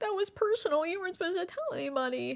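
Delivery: high, tearful, sobbing voice.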